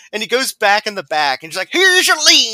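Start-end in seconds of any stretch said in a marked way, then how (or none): 1.7-2.5 odd put-on small-town rural voice, very high. Retelling what the butcher says, in a weird redneck butcher voice. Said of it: "this weird voice".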